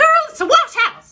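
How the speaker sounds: very high, very loud, shrill shrieking mom voice. Retelling what mom used to answer, imitating mom's high shrieking voice. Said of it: "She has this high pitched, shrieking voice".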